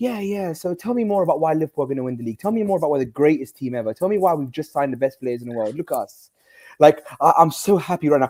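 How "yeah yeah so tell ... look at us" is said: cocky, smug, arrogant, boastful goading tone. Imitating Hussam taunting others about his club: imitating Hussam being arrogant. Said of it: "He used to do this and go".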